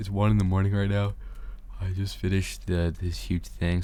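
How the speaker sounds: talking quietly. At one in the morning, not wanting to wake anyone: talking quietly. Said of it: "Sorry if I'm talking quietly".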